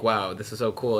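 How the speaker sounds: ordinary talk, nothing marked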